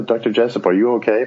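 normal talking voice

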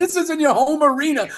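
very high-pitched, loud, incredulous rant. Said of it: "I was like".

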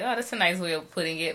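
ordinary talk

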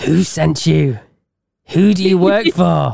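eerie, creepy delivery. Riffing on joke phone greetings, the speaker shows how to answer: creepy voice. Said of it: "I could just creepily go".

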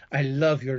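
acted whispering. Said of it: "so I was, uh, whispering that".

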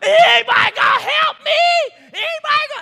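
very loud, high, shrill, top-of-lungs screaming. Retelling a lady on a Walmart cash register: imitating yelling at top of lungs. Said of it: "yelling, top of her lungs".

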